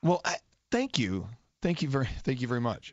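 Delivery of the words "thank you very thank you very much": teary, choking-up voice catching with emotion. Thanking a caller after a moment about loss: teary, voice choking up. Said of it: "I'm getting all teary".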